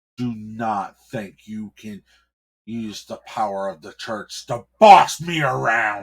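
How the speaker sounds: very loud, commanding, authoritative tone. Narrator voicing a man confronting a clergyman: with authority. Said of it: "he said with authority".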